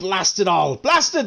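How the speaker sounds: put-on panicked cursing. Describing a game character who shows a token, acting out panicked NPC cursing. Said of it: "panicked NPC cursing his fate".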